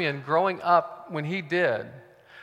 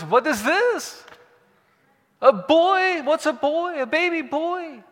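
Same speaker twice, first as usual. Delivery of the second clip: put-on Yiddish-inflected accent; 11 semitones higher, 4 dB louder than usual.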